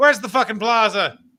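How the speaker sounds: sudden put-on Irish brogue, pitched high. Speaker imagining himself walking up to cops asking directions, in a sudden Irish accent. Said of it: "Why'd you go Irish there?".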